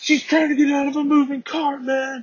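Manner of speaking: play-acted screaming in a very high voice. Retelling a confrontation where a man yelled back at the speaker; imitating a man screaming. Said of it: "The dude's fucking screaming back at me like".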